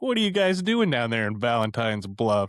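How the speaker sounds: casual, offhand, nonchalant and unbothered tone. Imitating the coroner who questions the town, nonchalant tone. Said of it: "so nonchalant".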